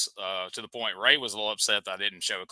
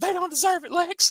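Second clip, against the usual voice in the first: excited voice, higher pitch; 3 dB louder than usual. Retelling a wrestling moment, imitating Brian: hyped-up voice. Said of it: "And he's so hyped up".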